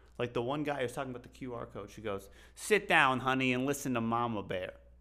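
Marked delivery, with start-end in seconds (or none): 2.6-4.8 put-on loud Bronx accent. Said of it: "you kill these accents".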